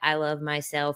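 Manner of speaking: flat, lifeless monotone with zero energy. Showing an affirmation said without giving it energy: flat, no energy. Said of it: "when you sound like that? ... you're giving no energy".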